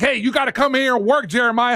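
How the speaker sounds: steaming, fuming, angry tone. Retelling what the caller's foreman says to him: imitating a fuming foreman. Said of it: "his foreman is, like, steaming".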